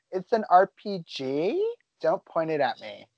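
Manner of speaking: put-on swooping high school valley girl voice. Mimicking how a co-speaker sounded about an RPG, in a valley girl voice. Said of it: "You sounded like a valley girl in high school being like".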